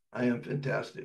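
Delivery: put-on lifeless, flat whisper with no conviction. Retelling how a depressed woman finally said the line: imitating a passionless delivery. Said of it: "She finally said it like this".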